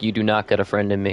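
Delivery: ordinary talk, nothing marked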